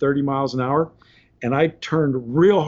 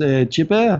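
put-on speaking with a French accent. Retelling what a boss said at work: Alain Clenet's French accent. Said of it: "he's French and he's got this accent".

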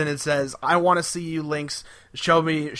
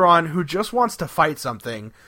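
normal talking voice

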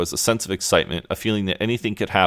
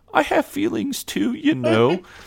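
put-on pathetic voice, much higher. Retelling a seating argument where one person is mocked: imitating John's pathetic little voice. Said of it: "in this just like little pathetic voice".

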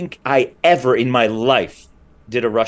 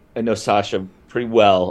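plain

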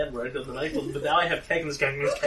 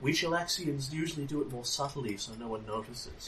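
secretive, very quiet half-whisper, barely audible; 9 dB quieter than usual. Ilyosa leans down to her and half-whispers so only a few hear: half-whispering very quietly. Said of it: "whispers very quietly to her".

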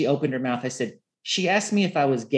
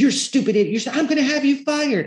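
mock frantic, very high, shrill shriek, repeated. Retelling a library confrontation, imitating the woman running out: imitating someone screaming. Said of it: "As she's like running out screaming".

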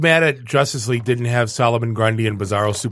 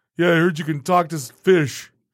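imitated mocking voice; 3 semitones higher than usual. Retelling how Batman talks to Aquaman: imitating a mocking tone. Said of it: "kinda mocking him".

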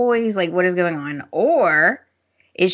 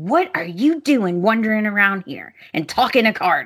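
fast, mean, cutting, nasty tone. Recapping a scene, quoting a woman being horrible to her sister: retelling a nasty remark. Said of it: "Zoe is just horrible to her sister".

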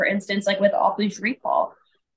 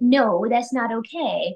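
sweet, gentle, friendly, pleasant-sounding tone; 3 semitones higher than usual. A speaker shows how people scold a cute dog: imitating a good-toned no. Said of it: "you're using it in a in a good tone".

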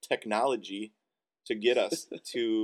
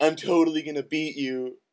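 play-acted mean, sneering taunting voice, high and loud; 6 semitones higher, 6 dB louder than usual. Retelling how she challenged the speaker to a turkey trot: mean mocking impression. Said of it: "that was a mean impression".

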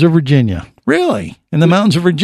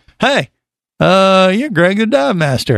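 halting, casual, flirting delivery; 3 semitones higher than usual. Retelling a first meeting at a bar, imitating Jerry. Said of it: "impression of Jerry".

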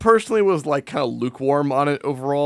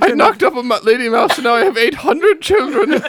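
shrill, very high, loud put-on Irish accent; 10 semitones higher, 5 dB louder than usual. Joking as a mouse son who had many children: put-on irish accent. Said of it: "I've become Irish for some reason".

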